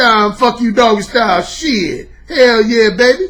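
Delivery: loud, drawn-out, over-the-top exaggerated street voice. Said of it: "I call that the exaggerated street brother voice".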